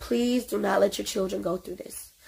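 earnest, pleading, begging tone. Speaking to parents who are watching, pleading. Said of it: "I beg and I plead".

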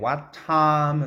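stress on the word time. Teaching English rhythm in What time is it, stress on time. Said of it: "What time이 음이상 강조 부분이기 때문에".

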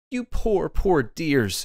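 pitying, sympathetic cry, high and drawn out. Mercedes kneels before the dog Buck, arms around his neck, crying out sympathetically. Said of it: "she cried sympathetically".

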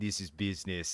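hushed, menacing, put-on Eastern European accent. Imitating a man the hosts are discussing, in an Eastern European accent. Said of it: "an Eastern European accent going".

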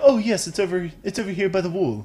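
put-on posh cartoon voice. Speaker retelling answering a woman who asked for ketchup, in a Stewie Griffin voice. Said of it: "Got a Stewie Griffin voice going on".

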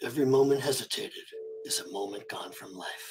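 hushed, breathy, near-whispered character delivery. Saying a famous quote on request: Wolfwood voice. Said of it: "you would have to say it in your voice".

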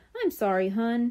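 ordinary delivery, nothing marked

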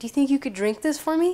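repulsed, distasteful tone. Retelling how she handed back her glass and asked, imitating her disgusted request. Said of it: "And with disgust".

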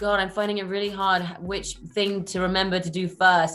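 ordinary delivery

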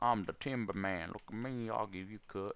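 fake Texan accent. Playing a Pokemon game, the speaker quotes a man who gives out cut; wannabe Texan accent. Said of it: "wannabe Texan accent".

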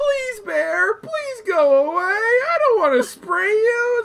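put-on, high, drawn-out pleading. Retelling a video of a woman asking a bear to leave: imitating a woman pleading with a bear. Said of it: "She's like".

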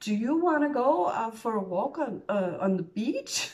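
acted nervous stammering. Retelling asking a friend to walk on the beach: imitating her own stuttering. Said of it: "stuttering, saying".

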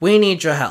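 ordinary delivery

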